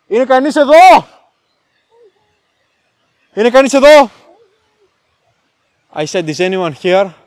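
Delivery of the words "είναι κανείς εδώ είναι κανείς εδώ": loud, high shout in native Greek. A speaker who escaped the cage calls out in his native tongue: shouting in Greek. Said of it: "I will shout in my Greek".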